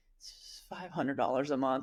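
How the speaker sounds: trembling, shaky, wavering, unsure voice. Speaker mimics someone naming their price, imitating a shaky voice. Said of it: "say it in a shaky voice".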